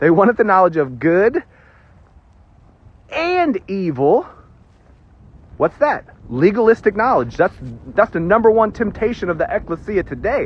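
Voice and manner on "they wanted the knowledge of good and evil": preacher-style emphatic delivery, pausing before "evil". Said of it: "I'm pausing for emphasis here".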